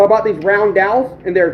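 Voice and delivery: plain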